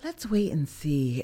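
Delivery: slow, unhurried, deliberate, drawn-out delivery. Retelling how she answers the speaker's eager plans, imitating her slower voice. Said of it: "that slower voice with the".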